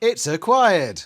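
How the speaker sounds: very loud, high-pitched robot voice. Mimicking what a shop machine says, in a self-checkout robot voice. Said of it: "Like one of those robot voices you get on".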